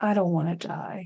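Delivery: soft, quiet, hushed voice. Retelling what he said while going to bed, imitating him speaking quietly. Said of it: "kinda quietly".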